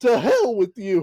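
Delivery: angry, high-pitched yelling. Retelling a wrestling scene, imitating Paul Bearer yelling. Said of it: "He's just yelling".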